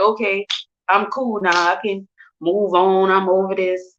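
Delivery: ordinary talk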